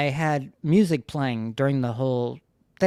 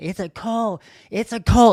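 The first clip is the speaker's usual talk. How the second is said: play-acted, raised, pitched-up screaming; 8 semitones higher, 6 dB louder than usual. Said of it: "'cause I was screaming it".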